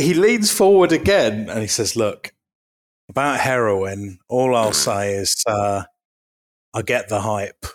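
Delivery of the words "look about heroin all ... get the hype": completely deadpan, low and slow. Retelling what a man leaned forward and said, imitating his deadpan. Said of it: "It was completely deadpan".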